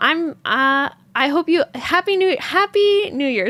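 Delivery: stuttering, stumbling, tripping over the words. Closing with new year wishes to the audience, stuttering. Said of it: "I'm just stuttering all over the place".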